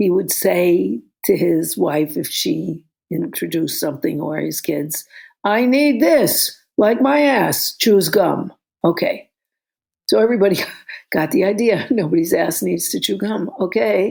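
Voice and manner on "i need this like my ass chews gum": mock authoritarian booming put-down voice, pitched up. Quoting an uncle talking to his wife and kids, imitating his booming voice. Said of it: "he'd say it in this booming voice".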